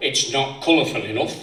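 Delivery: ordinary talk, nothing marked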